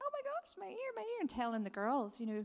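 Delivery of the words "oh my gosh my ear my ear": put-on, very high, delighted, joyful shriek. Retelling how a healed girl reacted, imitating someone screaming with joy. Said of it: "dancing and screaming, like".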